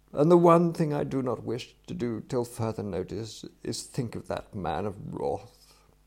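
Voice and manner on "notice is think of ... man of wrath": ordinary delivery, nothing marked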